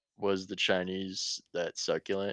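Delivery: ordinary delivery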